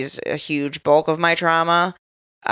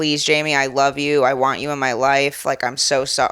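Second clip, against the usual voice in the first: put-on pleading, begging tone; 2 semitones lower than usual. Retelling a father's voice memos begging for forgiveness: imitating someone begging. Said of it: "begging me for forgiveness".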